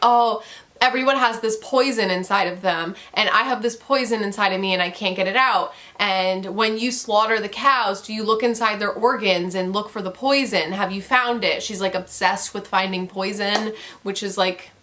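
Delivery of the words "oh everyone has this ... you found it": ordinary talk, nothing marked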